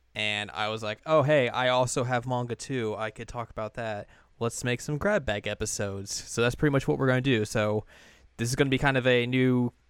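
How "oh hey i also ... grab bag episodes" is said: ordinary delivery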